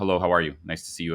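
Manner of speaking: play-acted, very stiff, formal, polite voice. Showing how one greets estranged parents: imitating stiff formal politeness. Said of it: "very formalized".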